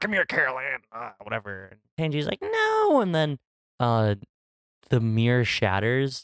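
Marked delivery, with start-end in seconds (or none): 0.0-1.7 mock irritated, fed-up, annoyed calling voice. Retelling a scene and voicing the uncle: mock-annoyed uncle. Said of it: "the uncle gets all like annoyed and goes like".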